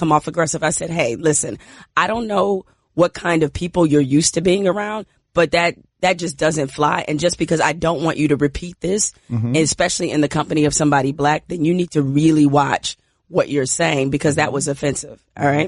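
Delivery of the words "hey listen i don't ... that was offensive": ordinary talk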